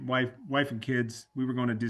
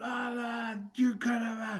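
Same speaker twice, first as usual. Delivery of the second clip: very high, shrill, angry acted-out gibberish yelling; 11 semitones higher, 3 dB quieter than usual. Retelling a freeway run-in where the other driver yelled: imitating a man yelling. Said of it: "he just starts yelling at me".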